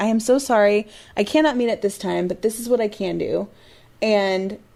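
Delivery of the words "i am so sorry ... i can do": ordinary talk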